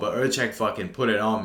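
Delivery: ordinary talk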